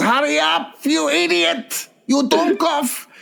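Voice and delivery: very high-pitched put-on German accent. Pretending to be a talking toilet urging someone on: German accent. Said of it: "you press a German accent".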